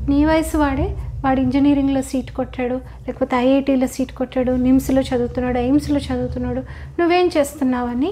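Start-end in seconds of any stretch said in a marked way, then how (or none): none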